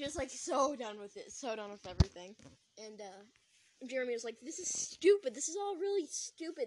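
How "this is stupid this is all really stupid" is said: put-on high, loud, abrupt snapping outburst. Speaker retells Jeremy suddenly snapping: mock angry outburst. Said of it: "Why he just randomly decided to snap".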